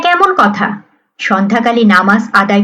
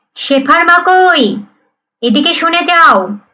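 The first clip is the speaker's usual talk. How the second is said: irritated, annoyed calling out, pitched up; 7 semitones higher than usual. Reading a story where a husband calls his wife: annoyed voice. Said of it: "বিরক্ত গলায় ডাকলেন".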